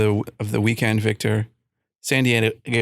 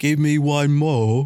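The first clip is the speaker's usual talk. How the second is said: put-on commoner London British accent; 4 semitones higher than usual. Asking what kind of British accent he has, trying a London accent. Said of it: "like like London?".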